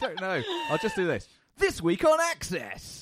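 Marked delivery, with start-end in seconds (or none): 1.6-3.0 very high, swooping arcade announcer voice. Asked to do a game-style intro, announcing the show in an arcadey announcer voice. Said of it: "is that quite arcadey?".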